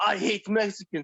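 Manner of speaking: mock, spat-out, blurted outburst. Recalling your grandma blurting this out at Applebee's, retell her line spat out. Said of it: "she just spat out".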